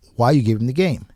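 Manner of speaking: mock heated anger, really riled and pissed off. Retelling an argument with the umpire over a point: imitating own angry protest. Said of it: "I got really pissed off".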